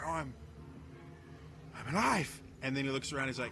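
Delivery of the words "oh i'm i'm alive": slow, breathless words between gasps. Voicing a revived character grabbing at his neck: gasping in character.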